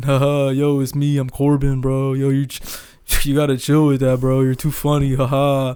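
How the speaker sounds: flat, monotone delivery held on one note. Imitating how a guy on the show talks: flat monotone Corbin impression. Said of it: "He has like the most monotone fucking voice in the show. He literally talks like this".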